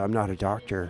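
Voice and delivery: hushed, very quiet, barely audible half-whisper. Retelling how he half-whispers to the doctor: retelling a half-whisper. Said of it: "he whispers to the doctor who's there".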